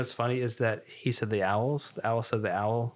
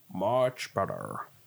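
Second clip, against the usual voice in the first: put-on storybook-style alligator character voice; 3 semitones lower than usual. Reading a story aloud, the alligator answers Ben, in an alligator voice. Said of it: "My alligator voice".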